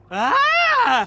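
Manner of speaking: high-pitched startled scream. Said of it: "Why are you screaming?".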